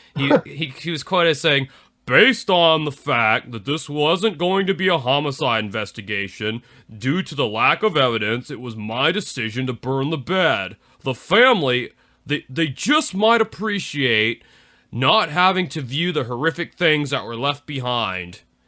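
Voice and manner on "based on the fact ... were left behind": weird, dopey, doofus sheriff voice. Quoting the sheriff's statement about the case, imitating his doofus-sounding voice. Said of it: "impersonate this guy's voice because he has such a weird like doofus kind of sounding voice".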